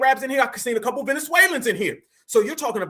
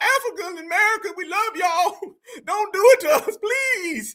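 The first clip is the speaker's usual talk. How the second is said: mock scared pleading, high, voice cracking; 8 semitones higher than usual. Commentator mocking a woman on a show; imitating a scared woman pleading. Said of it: "did I do a damn good impression?".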